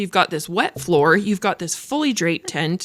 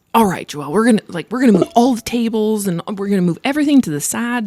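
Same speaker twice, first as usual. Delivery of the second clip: put-on sweet, cute southern American accent. Retelling what Mark told Joelle, speaker quotes Mark's cute southern accent. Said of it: "like that cute little southern mm-hmm. accent".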